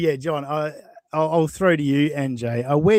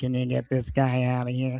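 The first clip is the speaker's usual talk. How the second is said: mock complaining, plaintive whine; 3 semitones lower, 4 dB quieter than usual. Retelling what Shuley said to security, in his whiny tone. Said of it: "in his whiny tone said".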